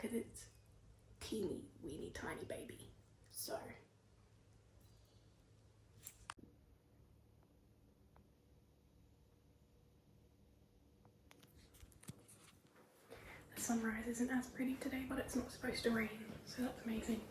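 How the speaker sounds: very quiet, barely audible whisper. Stressed about leaving a car park, whispering because the walls are thin. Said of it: "I'm whispering because the walls are kind of thin".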